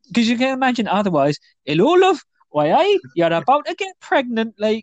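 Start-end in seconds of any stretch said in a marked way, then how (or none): 1.7-4.9 put-on Geordie accent, kept up throughout. Acting out a man approaching a woman, in a put-on Geordie accent. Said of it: "he's got that weird Geordie accent".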